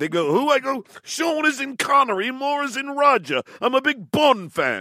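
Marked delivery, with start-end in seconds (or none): 1.0-4.8 bad fake English accent, pitched up. Retelling how they introduced themselves to some ladies, in a bad fake english accent. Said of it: "do your English accent".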